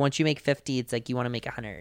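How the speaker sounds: put-on soft, girly voice. Quoting what she says in a documentary, in a Paris girl voice. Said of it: "I love your girl voice".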